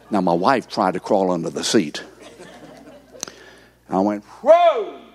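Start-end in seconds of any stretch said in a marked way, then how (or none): 4.2-4.8 a yell pitched very high. Retelling reacting at a grandchild's graduation: imitating his own yell. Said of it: "let out a yell".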